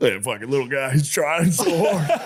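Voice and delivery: emotional, choked-up voice close to tears. Speaker imitating his dad watching the Budweiser Clydesdale ad: imitating choked-up dad. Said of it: "my dad would get choked up".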